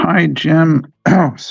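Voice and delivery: very high voice, cracking and breaking. Greeting someone after not speaking all day, voice cracking. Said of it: "my voice is cracking".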